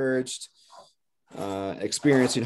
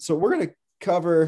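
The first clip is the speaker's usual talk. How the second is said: voice cracking mid-phrase, jumping high; 5 semitones higher, 3 dB louder than usual. A speaker leading a class starts the day's lesson, voice cracking. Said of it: "My voice just cracked".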